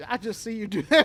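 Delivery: loud Alabama twang, partly Brazilian-sounding. Imitating how police in Venezuela talk: imitating Venezuelan police, sounding Alabama-like. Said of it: "You just sounded like someone from Alabama and Brazil".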